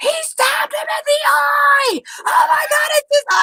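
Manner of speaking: mock very high, shrill top-of-the-lungs scream. Retelling a joust stabbing, imitating her own screaming. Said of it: "I'm just screaming this at the top of my lungs".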